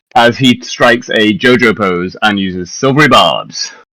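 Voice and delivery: ordinary talk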